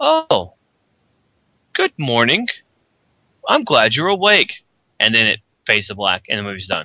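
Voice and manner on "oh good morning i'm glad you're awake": high, sing-song character voice with big pitch swoops. Imagining a film ending where GLaDOS greets the waking heroine: GLaDOS voice. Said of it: "you hear Gladys' voice".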